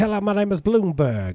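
squeaky, very high-pitched voice. Joking about rich people, imitating Bloomberg. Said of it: "Bloomberg's like".

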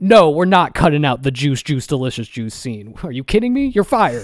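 loud, high, tyrannical ranting.

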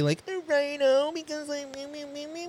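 very high, soft silly put-on voice. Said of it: "What was that voice?".

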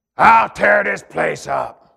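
loud, harsh, rough, rasping demonic growl. Recalling a night a demon manifested in a woman, the speaker imitates her demonic voice. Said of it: "the demon manifested, and she started talking like this".

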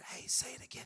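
soft, hushed whisper. Acting out a listener asking the speaker to repeat: imitating a whisper. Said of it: "if you whisper".

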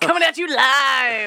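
cheesy DJ patter, loud, high and drawn out. Doing an impression of Jarrett: Jarrett doing cheesy radio voice. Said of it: "doing a cheesy radio guy voice".

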